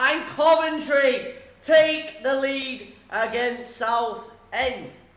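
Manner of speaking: loud, very slow, weighty, emphatic delivery. Announcing a result, said slow to put emphasis in it: slow and emphatic. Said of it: "You've got to say it slow to put a bit of emphasis in it".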